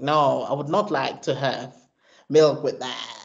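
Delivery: sarcastic, mocking, put-on affected celebrity tone. Retelling how he answers a woman's question about milk, mocking Kim Kardashian tone. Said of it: "And he mocks her".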